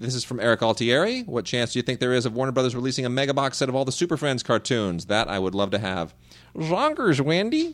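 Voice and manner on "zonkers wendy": very high, cartoonish sidekick voice. Showing your best impression to Mark while talking about Super Friends cartoons, Marvin impression. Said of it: "That's my best Marvin impression".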